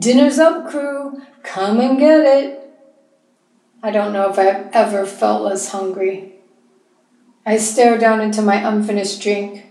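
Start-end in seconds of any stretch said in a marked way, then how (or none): 0.0-2.6 cheery, hearty, jovial call, pitched up. Bert calls the crew to dinner from the kitchen: calling jovially. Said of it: "Bert calls jovially from the kitchen".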